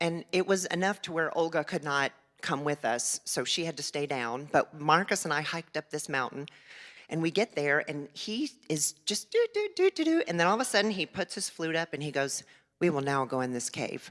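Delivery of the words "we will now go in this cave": put-on deadpan delivery. Retelling his words before going into a cave: imitating deadpan delivery. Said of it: "And he's deadpan".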